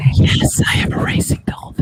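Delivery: mock ASMR whisper, high-pitched and unvoiced.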